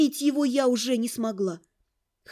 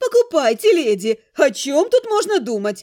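loud, eager exclaiming cry; 5 dB louder than usual. A seamstress holds a dress up to the narrator and exclaims. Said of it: "воскликнула она".

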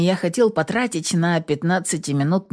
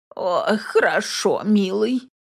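put-on croaky, groaning old woman voice; 3 semitones higher than usual. Reading a story aloud, a grandmother answers the narrator, groaning. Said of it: "кряхтит Аглая Рудольфовна".

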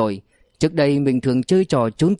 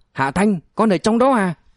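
high, startled, stunned cry; 6 semitones higher than usual. Hạ lam rushes to a locked safe and calls to his son inside, shouting loudly. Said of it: "lao đến trước chiếc két bảo hiểm hét lớn".

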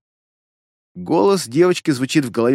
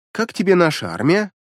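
usual speaking voice

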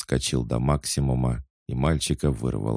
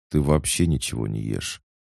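usual speaking voice

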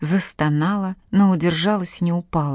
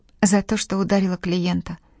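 ordinary delivery, nothing marked

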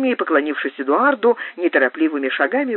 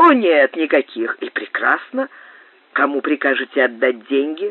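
usual speaking voice

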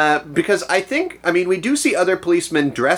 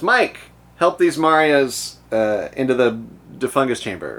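usual speaking voice

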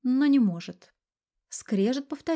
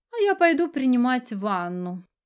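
put-on affectionate tone, feigned tenderness, falsely sweet; 3 semitones higher than usual. A wife answers her husband, who stayed home to watch hockey: feigned tenderness. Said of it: "с притворной ласковостью произнесла Виолетта".

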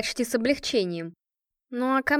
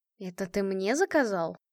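incredulous, disbelieving, can't-believe-it tone; 3 semitones lower, 3 dB quieter than usual. She answers Asadov's teasing with a question, disbelieving. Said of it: "спросила неверяще".

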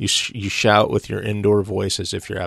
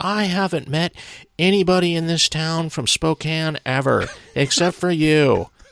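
high, tickled character voice, pitched up; 8 semitones higher than usual. Retelling what David Lynch told a fellow Spokane native, in a David Lynch impression. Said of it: "That's a good impression".

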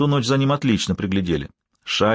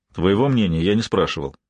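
ordinary delivery

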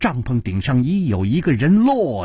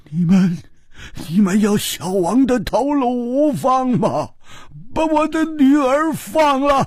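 trembling, quavering, shaky voice; 11 semitones higher than usual. The Qiuci king speaks to his daughter's captors in a trembling voice. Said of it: "秋瓷王颤声说".

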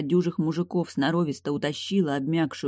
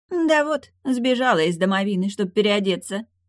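biting, acid, sharp-tongued sarcasm, pitched up; 5 semitones higher, 4 dB louder than usual. A ghost, laying her belongings on the bed, answers another woman, acidly sarcastic. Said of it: "язвительно сообщила Розе".

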